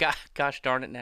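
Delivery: put-on Texan southern accent. Asked for a southern accent, a speaker shows off a texas accent. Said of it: "I can do a Texas accent".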